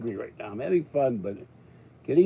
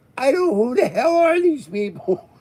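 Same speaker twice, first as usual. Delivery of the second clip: very high, loud put-on French accent; 12 semitones higher, 7 dB louder than usual. Recalling hockey fans taking over his video, mocking them in a French accent. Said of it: "making fun of the act, French accent".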